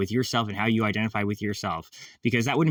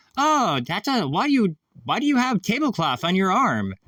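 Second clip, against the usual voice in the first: worst fake Japanese accent, pitched very high; 10 semitones higher, 4 dB louder than usual. Speaker acts out a restaurant server friend asking a question: bad Japanese accent. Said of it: "this is my worst Japanese accent".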